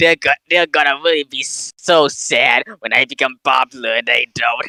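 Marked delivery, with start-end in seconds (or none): none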